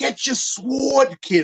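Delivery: put-on high, loud, slow, heavy Jersey accent. Show how you heard him say the word sword, in Danny DeVito's Jersey accent. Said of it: "because of his Jersey accent".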